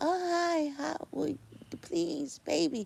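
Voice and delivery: very slow, syrupy, high, put-on fake sweet voice. Showing how a sweet, passive way of speaking would sound: put-on sweet voice. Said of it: "Or maybe I could say it in a sweet way".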